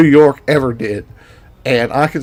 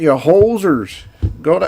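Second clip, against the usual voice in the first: attempted Minnesota accent; 3 semitones higher than usual. Trying their best midwestern impression while discussing regional accents, in a minnesota accent. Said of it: "my best uh, Minnesota accents".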